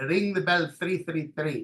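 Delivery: put-on heavy Greek accent. Retelling what a man with a sticker on his office door always said, thick Greek accent. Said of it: "he always used to say in his very thick Greek accent".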